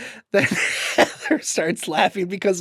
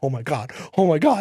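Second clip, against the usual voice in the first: low, stunned, panicky disbelief; 7 semitones higher, 5 dB louder than usual. Recounting seeing a hologram reveal, retelling freaking out. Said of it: "And I start freaking out".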